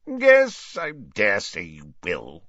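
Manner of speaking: grunting. A man who has just agreed to come out of retirement answers, grunted. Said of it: "grunted Slughorn".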